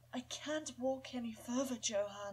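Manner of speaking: put-on old, motherly elderly woman's voice. Voicing an old character who cannot walk further: old and motherly voice. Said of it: "just sound old and motherly for her".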